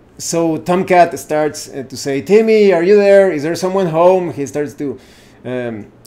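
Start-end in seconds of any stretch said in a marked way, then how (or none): 2.2-4.3 loud shout calling out. Narrating a character calling toward an abandoned cabin: character yelling to a cabin. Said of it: "yell to try to find out".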